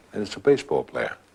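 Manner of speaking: ordinary talk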